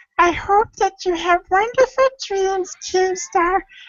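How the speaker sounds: very high, sing-song, swooping puppet voice. Challenged to prove he can do Elmo, the speaker does an Elmo impression. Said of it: "I even do Elmo".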